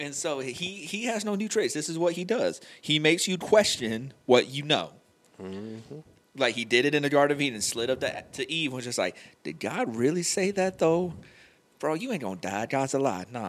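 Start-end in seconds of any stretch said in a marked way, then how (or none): 9.4-13.5 slick, persuasive, sly put-on smooth-talker voice. Acting out how he slid up to Eve in the Garden of Eden, put-on sly smooth-talker voice. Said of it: "that's the same voice he had".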